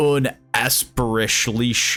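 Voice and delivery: over-the-top, heavy, exaggerated American accent. Pronouncing an unfamiliar name, exaggerated American accent. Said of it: "I gotta put the most American accent on it".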